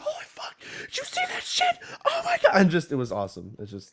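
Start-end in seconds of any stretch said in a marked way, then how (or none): 0.0-2.6 mock thrilled, super happy, hyped-up excited gush. Retelling own reaction while playing a game: imitating own happy screaming. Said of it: "me screaming and, like, not angry, but, like, just, like, super happy".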